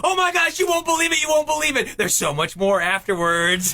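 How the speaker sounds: high, fast, excited blurt, bursting with excitement. Picturing the scene for the other hosts: mock-excited Kevin Parrott voice. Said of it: "this excited Kevin Parrott being like".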